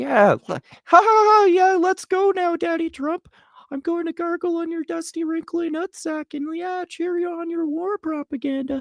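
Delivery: shrill, squeaky, very high-pitched mocking voice. Acting out Tucker cheering on Trump's war propaganda, in a high-pitched Tucker voice. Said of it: "I had Tucker talking in such a high pitched voice".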